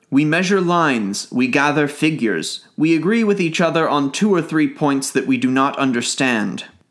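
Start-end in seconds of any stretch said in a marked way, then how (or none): none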